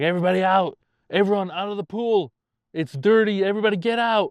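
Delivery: put-on dad voice, high-pitched yelling. Retelling how dad cleared the pool: imitating dad yelling.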